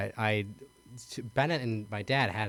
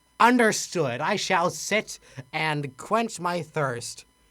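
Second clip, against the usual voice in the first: put-on grand lofty knightly voice, raised and slow; 8 semitones higher, 6 dB louder than usual. Retelling how Dad answered when told to sit down, in a paladin voice. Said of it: "who's a human paladin".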